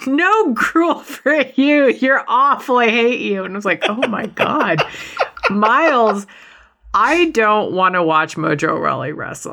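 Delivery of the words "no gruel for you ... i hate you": high, berating yell, acted out. Recounting a wrestling match, voicing Breeze yelling at his opponent: imitating Breeze yelling. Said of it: "Breeze is like yelling at him like".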